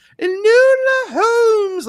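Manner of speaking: shrill, very loud, high, screeching comedy voice. Joking about a character's name: Mrs. Doubtfire voice. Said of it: "like in a Missus Doubtfire voice".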